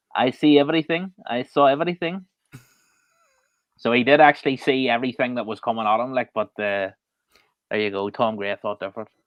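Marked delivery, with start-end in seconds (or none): 0.2-2.3 put-on, higher Russian accent with broken English. Quoting what a man said in his broken English, in a Russian accent. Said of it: "impersonate it in a Russian accent".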